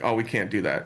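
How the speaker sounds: plain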